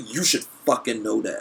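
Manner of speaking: ordinary delivery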